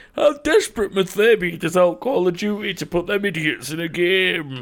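put-on slurred drunk voice. Retelling what was said while drunk one night: imitating own drunken slurred speech. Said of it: "through slurred speech, I managed to say".

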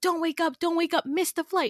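all-out, high, frantic screaming. Describing a dream, the speaker acts out voices screaming at the listener: imitating someone screaming. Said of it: "they're screaming at you like".

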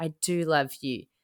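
put-on whisper. Retelling a scene where she whispered a line: imitating a whisper. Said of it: "And then she whispered".

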